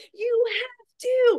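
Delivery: very high put-on yelling. Talking about a show contestant, retelling yelling at the TV. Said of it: "I'm like yelling at the T V".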